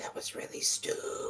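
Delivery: whispering snake voice. Voicing a snake sitting on another character's shoulder: whispering snake voice. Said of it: "the snake on Wick's shoulder whispers".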